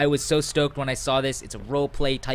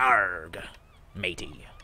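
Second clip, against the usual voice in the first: swooping, put-on storybook pirate voice; 5 semitones lower, 3 dB quieter than usual. Wanting to sound like a pirate, the speaker puts on a pirate voice. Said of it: "I want to sound like a pirate".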